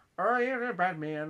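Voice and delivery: attempted put-on Irish accent. Imitating the Chief from the Batman animation: the Chief's Irish accent. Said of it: "He kinda has that Irish accent".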